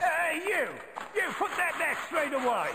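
very high-pitched put-on British accent. Playing a game, the speaker repeats a character's line in a British accent. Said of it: "Like the British accent".

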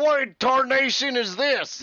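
put-on very high, loud holler in a Texas accent. Narrating a story, speaker voices Earl Beardy at a card game: Earl Beardy's Texas accent. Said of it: "I don't know why Earl Beardy has a Texas accent".

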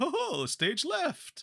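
very high, stretched-out cartoon voice. Imitating one of the bad bunny voices, doing a Snagglepuss voice. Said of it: "the other one sounded like Snagglepuss and was all like".

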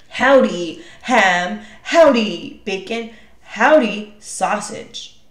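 slow, growling wolf voice. Narrating a story, the wolf character greets the pigs, growling as Tempesto. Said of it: "he growled".

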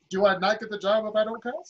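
ordinary talk

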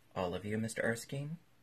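ordinary delivery

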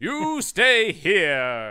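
loud, booming, swooping cartoon-hero voice, "here" stretched. Speaker retelling a movie scene, playing its hero: Dudley Do-Right voice. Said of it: "slowly turned to Dudley Do-Right, in my impression".

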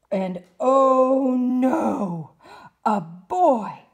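very slow, drawn-out monster scream, high and loud. The leading monsters burst into the room and see a boy, screamed. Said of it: "screamed the leading monsters".

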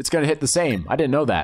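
plain

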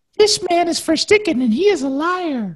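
very high-pitched, put-on woman's voice. Reading out a quote on a show, done in a female voice. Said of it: "I should do this in a female voice".

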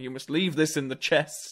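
scolding tone. Retelling a shopkeeper character, Mister Wing, scolding his grandson: imitating Mister Wing scolding. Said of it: "scolding his grandson".

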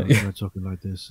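put-on quiet whisper. Mocking how quietly the wrestler speaks on the mic: imitating Roman Reigns whispering. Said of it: "totally whispering into the microphones".

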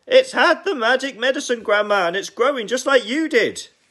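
very loud, very high, thrilled, excited yelling. George, hopping about and pointing at the enormous hen, excited shouting. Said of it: "hopping about from one foot to the other with excitement".

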